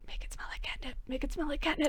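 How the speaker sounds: whispered aside, a little high, said twice. Voicing a character speaking to another player: whispering. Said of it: "Laura whispers to you".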